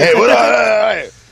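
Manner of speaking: high, excited, bursting-in delivery. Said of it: "Pat Seymour was our fucking Kramer".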